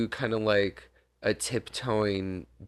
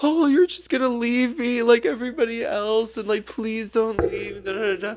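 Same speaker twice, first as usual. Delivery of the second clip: mock sobbing, very high, loud crying voice; 4 dB louder than usual. Retelling how a man pleaded not to be left, imitating someone crying. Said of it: "he starts to cry a lot".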